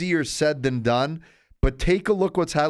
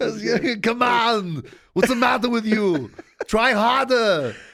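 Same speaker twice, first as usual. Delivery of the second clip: scolding, chewing-out tone, pitched up; 6 semitones higher than usual. Talking hockey with a co-host, show how he talks with a John Tortorella impression. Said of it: "That's John Tortorella".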